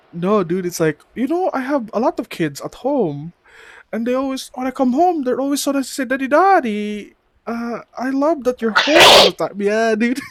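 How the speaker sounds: put-on heavy Filipino accent, pitched very high, loud. Describing an older Filipino guy who says daddy a lot, imitating Jay's thick accent. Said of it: "He has a pretty thick accent".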